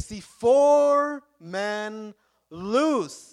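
slow, loud, awed voice.

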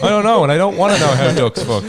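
loud, high-pitched outburst with laughter.

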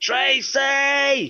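mock bellow, very high-pitched. Retelling how someone bellowed a name into an office: imitating a bellow. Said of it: "bellows into this office".

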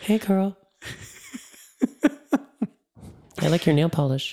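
put-on very high little-boy voice, about nine. Imagining what a nine-year-old spirit would say: imitating a nine-year-old. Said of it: "a nine-year-old being like".

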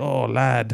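put-on old sea-dog way of talking. Describing how a man always talks, mimicking his old sea veteran's way of talking. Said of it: "this old sea veterans way of talking".

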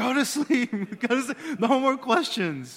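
shrill, very loud, high, fond yell. Retelling bedtime with the children, imitating own loving yell. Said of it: "lovingly yelling".

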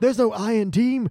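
put-on shouty sports announcer. Quoting the loud sports announcer character: imitating the shouty sports announcer. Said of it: "he's all".

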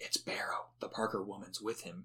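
secretive, hushed, breathy whisper. Retelling a line read for an episode: imitating someone whispering. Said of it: "he whispers".

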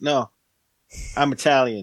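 very thick, exaggerated American accent. Acting out a film character trying to sound convincing: Brad Pitt impression, thickest American accent. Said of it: "the thickest American accent".

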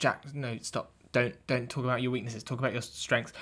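hushed aside.

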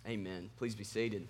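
strong, very low, deep, soft Southern drawl. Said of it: "the most Southern my voice has ever been".

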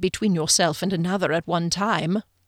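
ordinary delivery

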